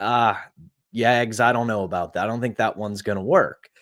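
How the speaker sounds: ordinary delivery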